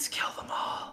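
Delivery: soft, breathy, barely voiced whisper. Leaning in to another character in a game scene: whispering. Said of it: "I lean in and whisper".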